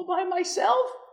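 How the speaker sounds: acted tiny, very high, quavering, trembling old lady voice. Retelling an old lady at her citizenship oath, answering in a small trembling voice. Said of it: "she said in a small voice".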